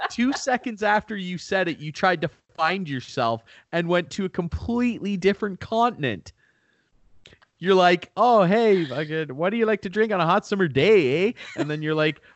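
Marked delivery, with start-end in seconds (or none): 8.1-11.3 imitated Canadian accent. Teasing someone whose accent drifted to another continent: put-on canadian accent. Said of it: "Canadian accent".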